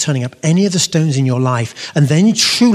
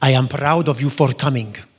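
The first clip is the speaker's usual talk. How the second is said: put-on Syrian-accented English. Quoting his father's words of welcome, in a Syrian English accent. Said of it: "lovely Syrian English accent".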